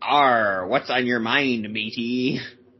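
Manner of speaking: put-on pirate voice. Explaining a pirate language setting, the speaker demos a pirate voice. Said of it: "you could set your language like pirate".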